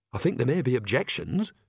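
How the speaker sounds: plain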